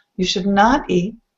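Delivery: firm, weighty stress on the word not. Explaining should not versus shouldn't, emphasis on not. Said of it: "you want to add emphasis to the not".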